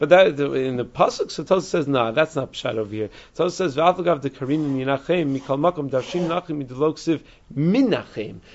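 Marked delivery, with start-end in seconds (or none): none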